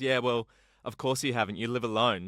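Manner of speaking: ordinary talk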